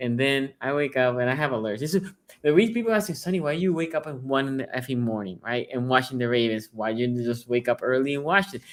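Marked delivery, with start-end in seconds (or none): none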